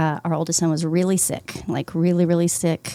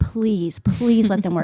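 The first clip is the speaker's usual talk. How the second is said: mock desperate, pleading, begging tone; 3 semitones higher than usual. Retelling praying outside a room one night: retelling own pleading prayer. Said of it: "Just pleading with the Lord".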